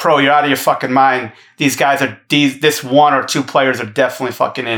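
ordinary talk

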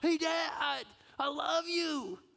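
put-on very high, slow, loud, drawn-out child's yell. Retelling a son shouting across the playground: imitating a child shouting. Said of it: "he just shouts".

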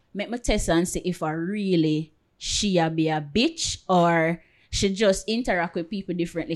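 ordinary talk, nothing marked

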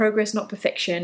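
ordinary delivery

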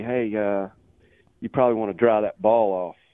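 whispered delivery. Retelling a remark whispered to the caddy on the tee: retelling Tiger Woods' whisper. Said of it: "whispers to the caddy".

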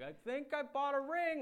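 shrill, booming, very loud, high, drawn-out yell. Retelling calling Dad from a Starbucks with big news: retelling a yell. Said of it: "yelling at him like".

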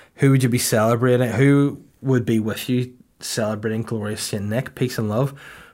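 ordinary talk

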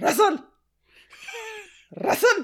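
put-on very high, called-out Indian dad accent. Recall a comedian's dad calling him when he's in trouble, like Russell Peters doing his dad's accent. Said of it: "how he does his dad's accent".

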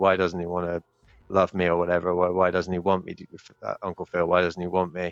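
put-on emotional, tearful, pleading voice. Retelling a character's emotional scene with Uncle Phil: imitating an emotional tearful plea. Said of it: "emotional scene with Uncle Phil at the end where he's like".

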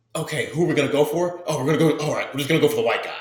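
put-on panicky, scrambling voice, high and rushed. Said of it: "you're saying it like a pla-, panic".

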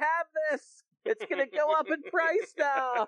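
put-on thrilled, excited, very high-pitched voice. Retelling a friend's reaction to owning a toy: imitating an excited friend. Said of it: "he was so excited. He's like".

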